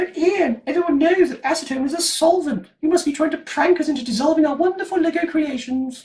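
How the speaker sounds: very high, silly, stupid nerdy voice. Imagining Lego nerds in the audience objecting to the host; Lego nerd's stupid voice. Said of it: "why are you talking in that stupid voice?".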